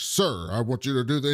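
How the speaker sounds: put-on mocking voice. Describing a man who mimics the people who work for him, imitating a mocking voice. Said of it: "He's just like this voice when he's like trying to make fun of these people".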